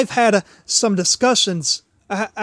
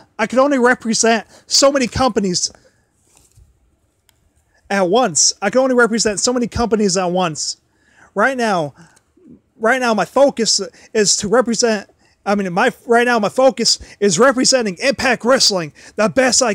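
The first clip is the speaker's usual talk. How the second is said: plain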